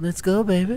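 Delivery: high, sultry, persuasive, seductive voice.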